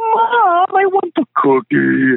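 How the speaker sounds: put-on very high, slow, sing-song little kid voice. Acting out a kid asking mom for a cookie, really high-pitched voice. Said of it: "these really high-pitched places like".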